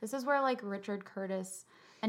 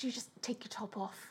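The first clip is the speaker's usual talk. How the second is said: put-on apologetic British voice, quieter; 7 dB quieter than usual. Imitating Tony's line from the film: imitating Tony, so British. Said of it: "It's so British".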